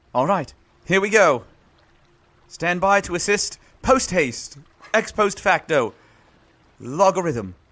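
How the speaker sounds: put-on British accent throughout. Playing a character who suddenly speaks in a British accent. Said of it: "with a British accent".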